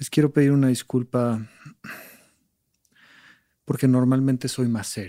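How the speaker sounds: mock serious and sorrowful, almost crying. Retelling a colleague's apology: imitating a sad, near-tearful apology. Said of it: "todo serio y triste, casi llorando".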